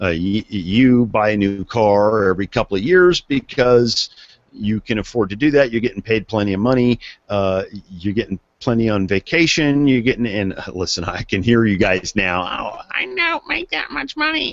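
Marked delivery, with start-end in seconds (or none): 12.4-14.5 soft, squeaky, put-on little voice. Imitating listeners who object, in a squeaky little voice. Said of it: "using that squeaky little voice".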